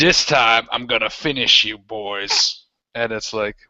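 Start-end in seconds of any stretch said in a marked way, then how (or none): 0.0-2.6 menacing, threatening villain voice. Voicing a returning bandit leader threatening the players. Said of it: "you can hear the sound like".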